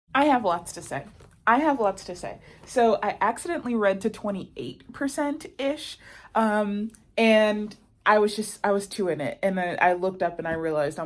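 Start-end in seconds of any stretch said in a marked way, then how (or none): none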